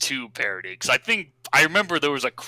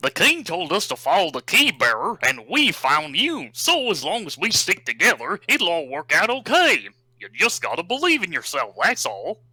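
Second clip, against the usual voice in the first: pitch swinging up and down, cartoon dog voice; 5 semitones higher than usual. Asked for an impression, the speaker quotes a Kingdom Hearts line: Goofy voice. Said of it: "I could do a decent sounding Goofy voice".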